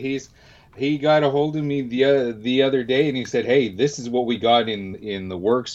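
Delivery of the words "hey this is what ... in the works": plain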